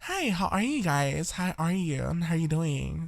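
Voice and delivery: put-on girly, soft, slow feminine voice. Teaching listeners to practice a girl voice, demonstrating a feminine voice. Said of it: "a feminine voice".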